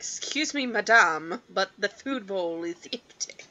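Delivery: courteous, polite put-on British accent. Voicing a pet chinchilla asking for food: british accent for pet chinchilla. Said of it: "my chinchilla is British".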